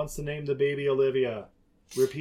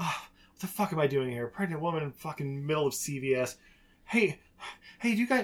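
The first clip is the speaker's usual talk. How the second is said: mock irritated, pissy ranting voice. Retelling a scene of a pregnant woman in a store: imitating a pissy mood. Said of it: "in a super pissy mood".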